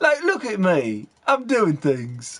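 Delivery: put-on voice, talking through teeth. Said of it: "he talks with his teeth".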